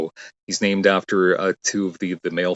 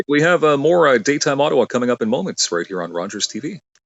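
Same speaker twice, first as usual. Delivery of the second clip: higher-pitched TV host announcer voice; 7 semitones higher than usual. Doing a tv sign-off line on request: on-air broadcaster voice. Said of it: "do it in your [name] voice".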